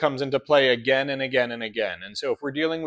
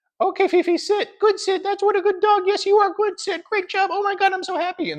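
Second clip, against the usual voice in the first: squeaky, very high cartoon voice. Imitating owners teaching dog commands, squeaky Mickey Mouse voice. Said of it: "in a squeaky Mickey Mouse high pitched voice".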